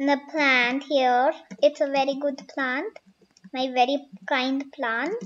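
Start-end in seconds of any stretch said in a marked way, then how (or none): none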